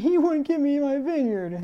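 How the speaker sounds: mock, very high-pitched crybaby whine. Speaker acting out a man in a scripture story, mock-whiny crying. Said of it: "in a whiny voice crying and saying".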